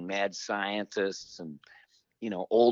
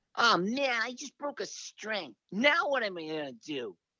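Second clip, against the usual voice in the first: very high, swooping, whiny, complaining nasal voice; 13 semitones higher than usual. Recalling how the speaker sounded at twenty-five in a band, imitating own whiny nasal voice. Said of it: "I was all whiny and nasally and complainy".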